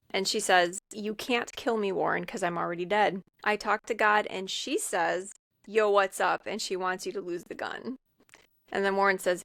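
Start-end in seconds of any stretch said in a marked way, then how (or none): none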